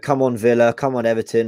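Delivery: plain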